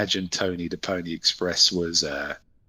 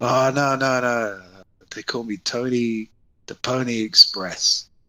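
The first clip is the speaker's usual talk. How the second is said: very slow, high, spaced-out stoner drawl; 6 semitones higher than usual. Retelling the driver's reply when asked if he was terrified, imitating Tony sounding high. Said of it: "You sound like you're high right now".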